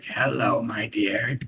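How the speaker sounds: eerie, creepy, rasping croak. Recalling a man's greeting from when the speaker was younger, in a creepy raspy voice. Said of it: "his creepy raspy voice where he's just like".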